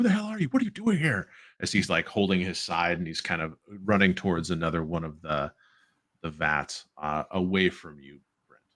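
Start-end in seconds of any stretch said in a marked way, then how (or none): 0.0-1.3 very high, rushed, screamed delivery. Narrator voices a bugbear confronting Brent's character in the game, screaming. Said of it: "he's kind of like screaming at you like".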